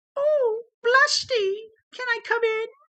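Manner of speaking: put-on feminine voice, very high, shrill, very loud. Reading a story aloud and voicing a character, in a feminine voice. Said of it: "Feminine voice".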